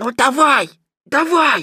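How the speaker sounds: loud, high, carrying hissed prodding. Reading a children's story aloud, voicing the rabbit's line with a loud hiss. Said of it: "громко прошипел кролик".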